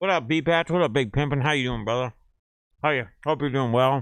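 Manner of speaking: talking while eating. Greeting someone and apologizing for eating, talking while eating. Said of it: "Eating, I know".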